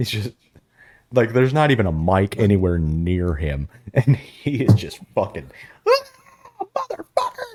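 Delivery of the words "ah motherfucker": play-acted, shrill, very high-pitched scream. Retelling how Jim Cornette screams during commentary: imitating Jim Cornette screaming. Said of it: "just screaming".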